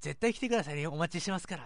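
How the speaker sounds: very high, loud, fast, hyped-up excited gushing. Quoting someone's reply about the dinner show, imitating a high, excited voice. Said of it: "もうあの高い声で、もうこんな感じで、もうすごいテンションで".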